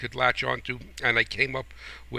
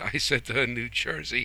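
normal talking voice

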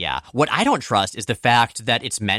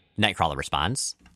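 ordinary talk, nothing marked

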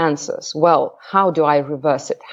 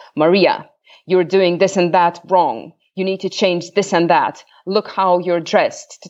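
mock stern, rigid, harsh scolding teacher voice. Retelling a teacher's criticism just before walking onto the stage, imitating a harsh teacher. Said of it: "very harsh voice, very rigid voice".

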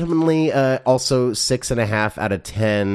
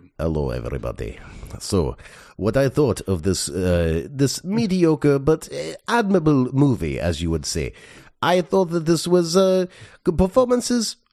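Russian accent throughout, drawn-out "this"; 3 semitones higher than usual. Asked to give an opinion on the film entirely in accent, speaking in a Russian accent. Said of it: "entirely in a Russian accent".

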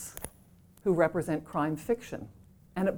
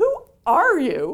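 play-acted, very loud, high, imperious tone; 9 semitones higher, 9 dB louder than usual. Louise Penny retells a woman finally speaking to her: imitating an imperious voice. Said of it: "in this very imperious voice".

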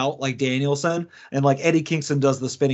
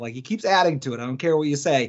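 ordinary talk

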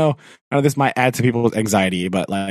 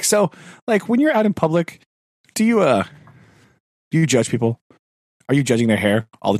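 put-on joking tone, much higher; 6 semitones higher than usual. The speaker recounts a question put to the hair lady, retelling a joking question. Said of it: "I just jokingly asked her".

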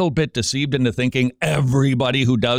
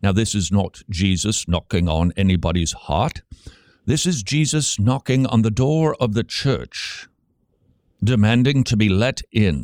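bad put-on British accent, much lower pitch; 3 semitones lower than usual. Quoting one of the fellows, in a bad British impersonation. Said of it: "that was a really bad British impersonation".

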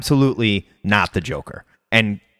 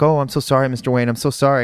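put-on meek, timid voice. Retelling a movie scene where a thief is caught: imitating Catwoman's meek act. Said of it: "she was pretending to be this meek uh, maid".

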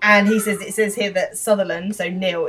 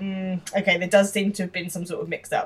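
normal talking voice

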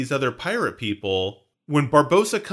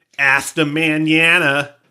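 put-on country English bumpkin accent speaking Spanish; 6 dB louder than usual. Teasing Heather, showing her as a country English bumpkin speaking Spanish. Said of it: "the classic country English bumpkin trying to speak Spanish".

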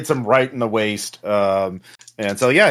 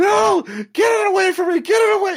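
panicked, terrified screaming, very high-pitched. Reading out the Boy Scout character's line after a failed check, terrified screaming. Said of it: "He starts screaming".

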